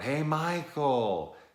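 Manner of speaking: high, slow, loud, drawn-out yelling out.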